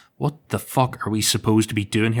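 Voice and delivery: put-on frantic, panicked voice. Retelling searching a journal while a room floods: imitating own frantic words. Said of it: "I'm frantically looking through the pages".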